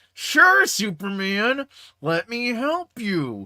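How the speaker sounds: play-acted, very slow, forced pleasantry through clenched teeth. Retelling Lex Luthor answering Superman's request for help, through clenched teeth. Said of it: "Through clenched teeth".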